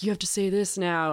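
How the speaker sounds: imitated, put-on whisper. Retelling a skit where Kamala Harris whispers in Biden's ear: imitating a whisper. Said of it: "Kamala Harris of whispering in his ear".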